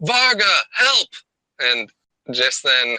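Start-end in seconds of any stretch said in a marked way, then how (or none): 0.0-1.1 very high, loud shouted yell. A character stands up at his desk after someone falls, yelling for help. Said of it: "he yells".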